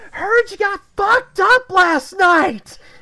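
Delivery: shrill, very high, very loud top-of-lungs yelling. Retelling what a woman yelled at her: retelling a top-of-lungs shout. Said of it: "says at the top of her lungs".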